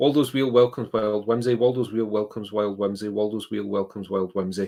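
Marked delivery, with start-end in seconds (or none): none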